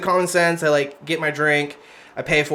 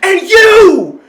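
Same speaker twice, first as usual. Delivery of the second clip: put-on woman's scream, higher and louder; 11 dB louder than usual. Retelling how the screaming woman turned on the speaker: imitating a woman screaming. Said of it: "screaming at these guys".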